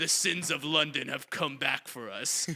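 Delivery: slow, drawn-out delivery, taking time over every word. Imitating how Vin Diesel talks slowly in movies: imitating Vin Diesel's slow delivery. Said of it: "he talks so slow".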